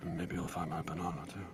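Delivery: muttering under breath. A player voicing their character's line in a game, muttering under breath. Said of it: "I say under my breath".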